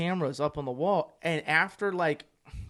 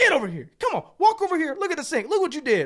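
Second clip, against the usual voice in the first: mad, furious, swooping, very high and loud; 12 semitones higher, 8 dB louder than usual. Retelling finding the dishes back in the sink: imitating his own angry demands. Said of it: "I'm so mad".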